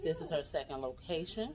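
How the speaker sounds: soft, hushed whisper. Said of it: "I'm kinda whispering".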